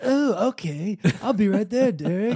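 put-on strained, loud cartoon-kid voice. Answering Derek as one of the young gamer listeners; strained Cartman voice. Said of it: "You sound like, I don't know, strained Cartman".

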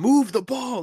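mock shrill yell, very high. Recapping a Celtics game, retelling Marcus Smart yelling. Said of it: "Marcus Smart yelled out".

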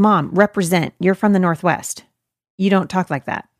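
ordinary delivery

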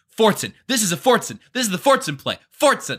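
high-pitched, repeated screaming. Retelling watching a player line up on a play: imitating own past screaming. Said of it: "I was just screaming".

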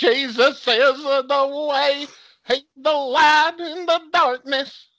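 put-on loud, high Southern accent, preacher voice. Imitating the speaker's mom answering the phone, in a southern preacher voice. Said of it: "you watch those Southern preachers and stuff".

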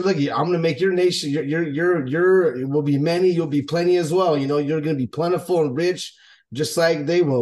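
plain

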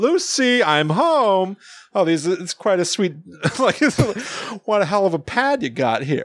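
chuckling character voice, laugh running through it. Quoting a man who always has a laugh in his voice, imitating his laughing voice. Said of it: "he's always got a laugh in his voice".

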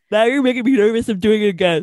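words swallowed and muffled mid-yawn. Answering another speaker about yawning, yawning while talking. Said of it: "You sound, like, muffled".

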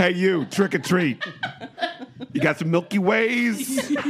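put-on New Jersey accent. Imagining a trick-or-treater at the door, in a New Jersey accent. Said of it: "everything is done in a New Jersey accent in my mind".

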